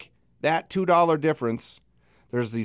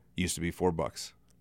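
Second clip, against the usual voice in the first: play-acted icy, very low and very quiet; 10 semitones lower, 10 dB quieter than usual. Retelling what one of the people served pitchers of beer said, mimicking a cold reply. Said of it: "coldly goes".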